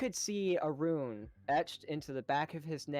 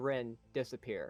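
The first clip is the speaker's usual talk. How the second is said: ordinary talk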